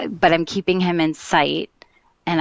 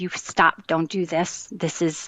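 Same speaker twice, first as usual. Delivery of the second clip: put-on pleading voice; 3 dB quieter than usual. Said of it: "I just was pleading with him".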